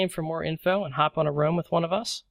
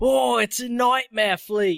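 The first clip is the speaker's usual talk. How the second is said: excited, high, thrilled nature-show host voice; 6 semitones higher, 3 dB louder than usual. Joking with fellow players about a fleet commander, the speaker does Steve Irwin impression. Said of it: "just LARPing as Steve Irwin".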